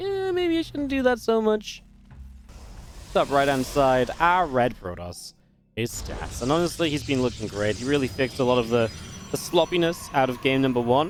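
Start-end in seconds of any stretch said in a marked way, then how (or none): 0.0-1.8 high, slow, self-mocking voice. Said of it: "I'd be a bit like".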